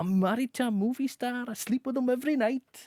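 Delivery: drifting attempt at Welsh accent, very high-pitched. Recounting an award speech, quoting the winner in an attempted Welsh accent. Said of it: "That was [name]'s attempt at a Welsh accent".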